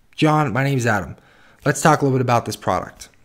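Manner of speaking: honest, straightforward, sincere tone. Demonstrating a good handshake greeting to a customer: sincere, honest, direct tone. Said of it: "Notice how my tonality is sincere, it's honest, and it's direct with John".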